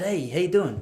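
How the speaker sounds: smooth, cool, easy-going voice. Retelling greeting a girl, painting himself in a better light: Joey style greeting. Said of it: "Joey style".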